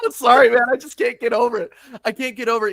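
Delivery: high, loud mock grieving sob.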